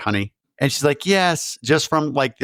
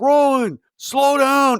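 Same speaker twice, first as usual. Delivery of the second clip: put-on scream, higher; 12 semitones higher, 4 dB louder than usual. Retelling a scene where a character runs from a mob: imitating a character screaming. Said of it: "And he's screaming at her".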